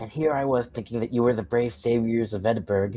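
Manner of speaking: whispering in character. In character, answering the party in secret: whispering in character. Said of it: "I will whisper back".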